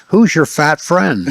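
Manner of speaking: toned-down hint of a loud, public voice. Retelling what she said while kneeling at the table: imitating a loud voice. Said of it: "she says to me in a loud voice".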